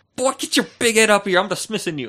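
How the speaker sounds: high, loud yelling through a megaphone. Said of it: "who was yelling at everybody on his megaphone".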